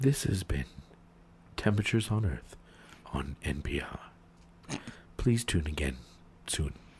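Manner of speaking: gentle, put-on public-radio announcer voice. Speaker parodies a radio sign-off, soothing NPR announcer voice. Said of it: "a soothing voice".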